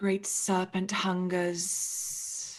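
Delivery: low, hissing voice. Voicing an unseen speaker who answers newcomers about tributes, low hissing voice. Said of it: "you hear a voice that is low and hissing".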